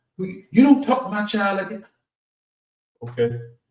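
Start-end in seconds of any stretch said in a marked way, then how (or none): 0.2-1.9 mock, very high-pitched, angry scolding. Retelling a mother scolding a stranger who spoke to her child: imitating an angry mother. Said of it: "I almost got cussed out".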